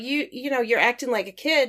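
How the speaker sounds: ordinary talk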